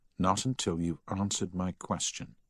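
ordinary delivery

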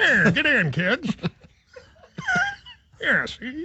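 put-on dated old chauffeur voice, sing-song. Voicing an old limo driver taking kids to prom: put-on old limo driver voice. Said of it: "It's a new voice I think you're debuting".

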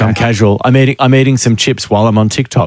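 ordinary talk

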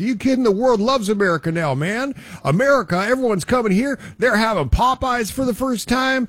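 excited, high-pitched voice.

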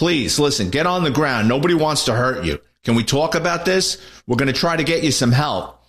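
ordinary talk, nothing marked

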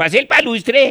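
put-on Russian accent. Showing a wool hat with its ear flaps down, fake russian accent. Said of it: "Queda hablando como ruso".

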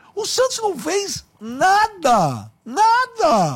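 slow, high-pitched indignant scoff.

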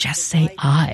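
slow, hushed whisper. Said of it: "whispering to Feinstein".

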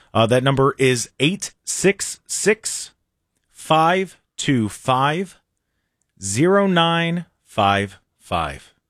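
slowed right down. Giving everybody the text number for a trivia question, saying it very slowly. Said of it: "I'm going to say it slow".

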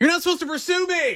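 very high, high-pitched hollering yell. Retelling a story of a man yelling at a pursuing deputy: retelling a yell. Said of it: "waved his hand out the window of the car and yelled".

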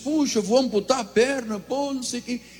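acted tearful voice. Retelling what he said in his hospital bed when asked why he was crying, imitating crying.

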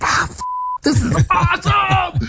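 fake amazed, thrilled outburst. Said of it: "I'm yelling at him and I'm screaming".

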